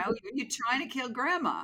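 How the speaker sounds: entitled complaining woman voice. Mocking a stereotypical Karen who scolds someone about a mask: imitating a stereotypical Karen. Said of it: "those Karens".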